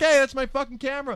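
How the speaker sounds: shrill, very high-pitched yell, acted out. Telling how he got up and yelled at the man who grabbed his camera, retelling his own yell. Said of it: "I started yelling at him".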